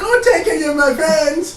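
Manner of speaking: very high, loud mocking wail.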